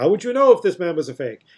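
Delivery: put-on grating, comic vaudeville-style German accent. Quoting a disguised guest at a party scene: imitating a vaudeville german accent. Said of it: "the most annoying vaudeville dialect comedian German accent".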